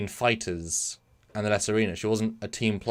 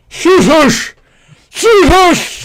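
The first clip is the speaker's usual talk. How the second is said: put-on yell, higher in pitch and louder; 17 dB louder than usual. Performing a Jurassic Park line on request, Klingon-style: acted loud shout. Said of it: "Jesus Christ, my ear".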